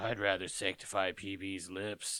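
very deep, very low, slow, soft voice. Recapping a cartoon episode, the speaker quotes Finn in Finn's very deep voice. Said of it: "Finn drops his voice like three octaves".

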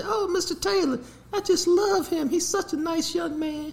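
very high, soft, put-on ladylike voice. Retelling what a teacher said to him: imitating the teacher's lady voice. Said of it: "use that damn lady voice".

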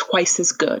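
whispered voice. Retelling how a woman answered a man who was yelling at her, whispering. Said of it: "she like whispers".

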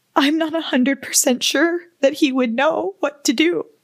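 crying, tearful speech. Speaker breaks down while telling something terrifying, crying. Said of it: "I'm literally crying over here".

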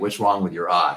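ordinary talk

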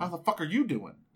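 mock pissed-off voice. Acting out how a friendly text sounds in his head: put-on pissed-off voice. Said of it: ""You're a pissed off at me" voice".

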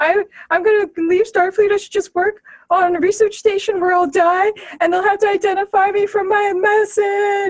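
acted, high, tearful, blubbering crying whimper. Recapping a scene where Boimler is found off to the side, imitating him crying. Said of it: "and he's like crying".

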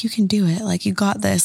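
really quiet, soft, encouraging murmur under the breath. Retelling how she encouraged herself while making charms, imitating someone speaking really quietly. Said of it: "hear her really quiet to herself".

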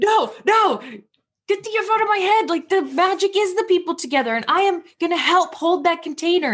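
shouting.

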